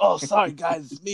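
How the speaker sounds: put-on slow, drawled Brooklyn accent. Retelling someone climbing in the window at night, quoting him in a Bernie Sanders accent. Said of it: "like in his fucking Bernie Sanders accent".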